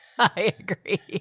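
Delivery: slow, giggly, laughing voice.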